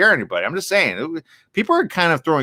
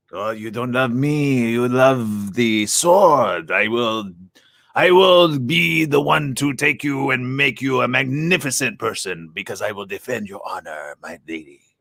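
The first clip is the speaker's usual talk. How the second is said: put-on slow, suave, unhurried Spanish accent; 2 semitones lower than usual. Speaker performs a film character's voice for listeners: Antonio Banderas impression. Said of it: "that's Antonio Banderas".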